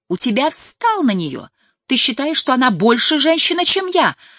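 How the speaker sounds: high, loud, nearly screaming near-shriek. Layla confronts Marty over the film they are watching, almost shrieking. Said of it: "Она почти визжала".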